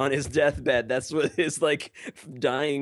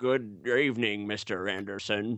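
put-on old man villain voice, much lower pitch; 4 semitones lower, 3 dB quieter than usual. Closing out the show, the speaker quotes the Smith clones; Agent Smith impression. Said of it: "Why did my Mr. Anderson sound like an old man?".

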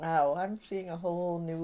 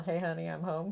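ordinary delivery

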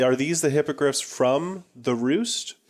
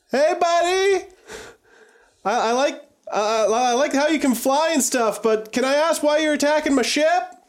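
loud shouting at much higher pitch; 13 semitones higher, 3 dB louder than usual. A player's character at the ship's edge calls to an attacking hippogriff, shouting at the hippogriff. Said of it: "I'm going to start shouting at the hippogriff".

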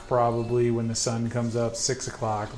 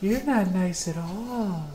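put-on eerie, high, creepy little child voice; 8 semitones higher than usual. Acting out a voice heard in your head all night, in a creepy little child's voice. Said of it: "Like a child's voice the whole time".

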